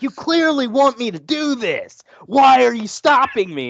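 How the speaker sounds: frustrated yelling. Retelling how they yelled at a game that kept stopping them: imitating yelling at a game. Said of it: "I'm yelling at the game".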